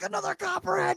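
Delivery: very high, excited, thrilled squeal.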